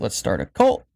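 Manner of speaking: normal talking voice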